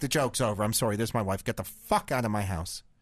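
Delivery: mock panicked, freaking-out outburst. Telling a prank story, acting out the husband's reaction: retelling someone freaking out. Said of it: "Jeff starts freaking out".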